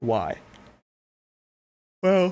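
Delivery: speaking while yawning through the word. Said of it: "sorry, I'm yawning".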